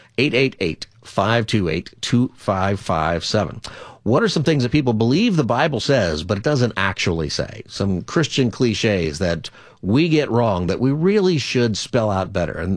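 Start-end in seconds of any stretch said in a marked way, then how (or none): 0.2-3.7 deliberately slower pace. Host of the [name] Show repeating the phone number for listeners, saying it slower. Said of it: "I'll say it slower".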